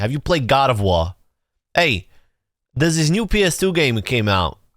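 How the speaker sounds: casual New York accent. Imagining how someone from New York would say the line, New York accent. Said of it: "like someone from New York saying".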